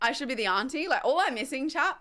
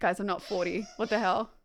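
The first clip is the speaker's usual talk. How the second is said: usual speaking voice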